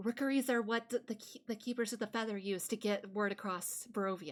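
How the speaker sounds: very quiet, hushed aside. Away from the guards, she nods and answers in a very quiet voice. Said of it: "she's saying in a very quiet voice".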